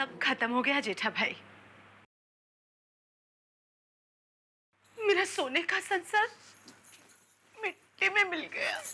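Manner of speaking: crying while speaking. A sister-in-law answers after hearing everything, crying. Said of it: "आप please आप रोइए मत अंजलि भाभी".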